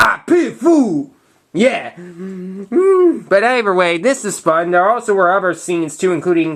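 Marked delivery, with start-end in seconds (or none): 0.0-1.1 tough, hard-man voice. Telling people what you'd say if they don't like what you say, use your Mr. T voice. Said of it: "my Mister T voice".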